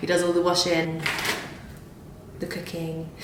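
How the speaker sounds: hushed, quiet, secretive whispered aside. Telling the girls who does all the washing and cooking: whispering. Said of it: "I'm whispering because he gets really annoyed".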